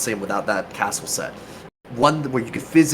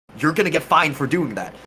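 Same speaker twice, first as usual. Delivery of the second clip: put-on noble-style yelling, higher; 5 semitones higher than usual. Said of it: "I just started yelling at people".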